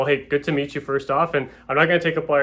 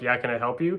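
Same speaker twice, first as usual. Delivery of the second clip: put-on confrontational tone, quieter; 4 dB quieter than usual. Coaching on approaching people, acting out a confrontational person's reply, imitating a confrontational person. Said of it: "com- a bit confrontational".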